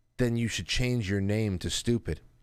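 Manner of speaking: mock hushed, whispered tone. Retelling his reply after being told not to call names, imitating a hushed reply. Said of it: "in which he replies in the same hushed tone".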